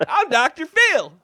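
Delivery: loud, high-pitched belting. Pretending to be Doctor Phil offering to help with problems: Doctor Phil voice. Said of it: "you did that voice".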